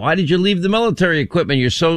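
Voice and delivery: ordinary talk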